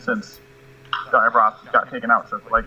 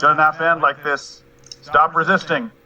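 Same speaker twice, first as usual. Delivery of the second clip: pleading, called out loud, a touch high; 5 semitones higher than usual. A player's character calls out to enemies during a fight, yelling. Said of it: "I'm gonna yell out".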